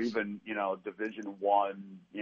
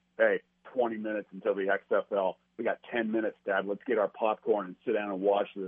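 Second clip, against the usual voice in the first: ordinary talk, nothing marked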